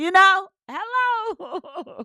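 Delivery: squealed put-on voice, very high-pitched and loud. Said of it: "My [name] voice".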